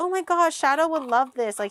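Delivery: mock, really excited, eager gushing chatter. Retelling what gets said on trying new baked goods: imitating own excited voice. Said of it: "I always get really excited".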